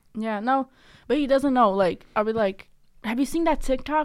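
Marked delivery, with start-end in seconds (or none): 3.1-4.1 hyped, pitched-up, very amped-up delivery. Retelling asking someone about a video: imitating own hyped-up voice. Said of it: "mad amped".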